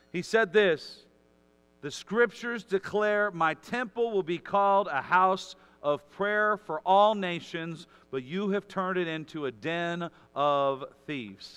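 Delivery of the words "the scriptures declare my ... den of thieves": usual speaking voice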